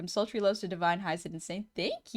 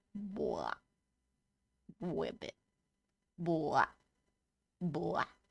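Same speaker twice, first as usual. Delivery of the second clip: open-throated, deep frog voice, very slow and drawn out; 4 semitones lower, 5 dB quieter than usual. Showing viewers how to pretend an entirely different voice: low froggy voice. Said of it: "You gotta open your throat lower like a frog".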